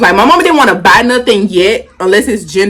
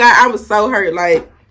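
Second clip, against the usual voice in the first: plain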